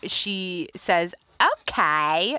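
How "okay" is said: put-on Australian accent with drawn-out "okay". Imitating a young daughter answering a parent: imitating a child's australian accent. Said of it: "with, like, an Australian accent".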